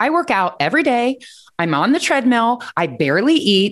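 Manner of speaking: put-on high, defensive, justifying tone. Retelling explaining their eating to a trainer, the speaker acts out being defensive. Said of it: "like all defensive".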